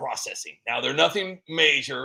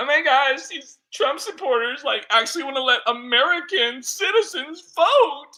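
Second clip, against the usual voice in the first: mock, shrill, very high screaming voice; 12 semitones higher, 4 dB louder than usual. Mocking a politician's reaction: mock screaming AOC impression. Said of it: "A O C is out there screaming like".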